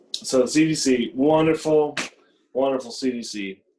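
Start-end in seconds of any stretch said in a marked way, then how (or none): 1.2-3.6 thick, dry, insincere sarcasm. Talking to another speaker about the C D C's latest statements: sarcastic. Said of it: "Can you taste the sarcasm?".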